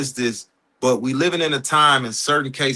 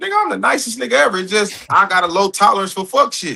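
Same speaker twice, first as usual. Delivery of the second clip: ordinary talk, nothing marked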